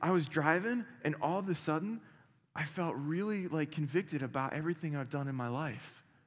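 put-on crying, tearful speech. Retelling what a recently married man said on the phone, imitating someone crying. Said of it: "he's crying on the phone with me".

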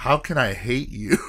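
ordinary talk, nothing marked

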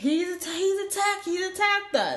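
mock high-pitched scream, tripping over the words. Retelling a dog park quarrel, imitating a woman screaming. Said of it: "The woman starts screaming".

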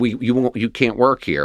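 ordinary talk

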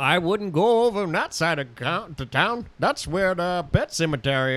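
put-on Maine fisherman accent. Playing a Maine fisherman warning about the town: put-on Maine accent. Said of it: "Where am I from? Maine".

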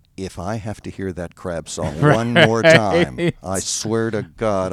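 slow, unhurried, even, deliberate delivery. Retelling what a wife says near him: imitating wife speaking very softly. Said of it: "she says very softly to me".

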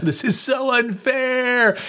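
very high, very slow, drawn-out wailing. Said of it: "crying out to God".

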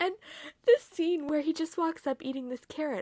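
words bubbling through laughter. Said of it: "I literally just start laughing".

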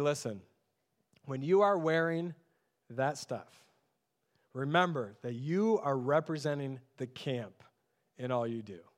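acted-out low, solemn, dead-serious, no-joking lecturing tone. Recalling what the camp director used to tell them, imitating a deadpan director. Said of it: "he would look at us deadpan, like not joking".

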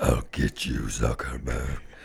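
very low, deep, dark superhero voice. Repeating the mock threat to Facebook's boss: too Batman-y voice. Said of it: "Mine was too Batman-y".

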